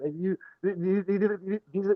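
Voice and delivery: stumbling over repeated words. Speaker recalling the best night out with the others, stuttering. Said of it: "sorry, I keep stuttering".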